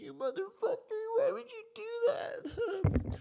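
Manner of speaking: crying, very high, wailing yell.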